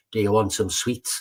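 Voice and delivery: ordinary talk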